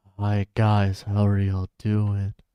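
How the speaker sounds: put-on loud whispering. Showing the other speaker how they sound on stream: imitating a loud whisper. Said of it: "it sounds like you're whispering, but, like, loudly".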